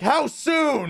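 put-on annoyed, upset voice. Retelling a luggage delay announcement, the speaker imitates an upset man. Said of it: "he's just like upset".

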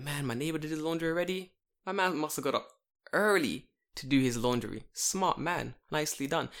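plain

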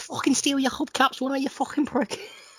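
put-on Scouse accent, very high-pitched. Retelling what a man said, in a scouse accent. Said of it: "I was transitioned into a Scouse accent".

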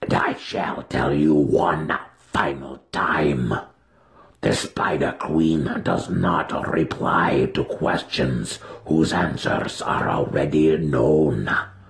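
low, snarling, beast-like creature voice. Reading a story aloud, the Yawklul answering Matron Malice Dorden, snarling Yawklul voice. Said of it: "the Yawklul snarled with his droopy mouth".

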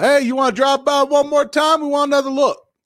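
acted very high-pitched hollered yell. Retelling calling out to a passing car driver: retelling a yell. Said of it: "I just yelled".

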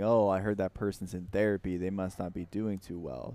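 ordinary talk

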